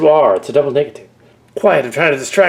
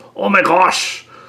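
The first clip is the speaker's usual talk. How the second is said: put-on Irish accent, higher pitch; 4 semitones higher than usual. Recalling a time of putting on an accent: irish accent. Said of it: "I put on an Irish accent".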